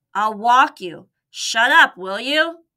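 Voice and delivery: groggy, irritable grumbling. Reading a story, a man stumbles out carrying his barking terrier, grumbled. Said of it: "he grumbled".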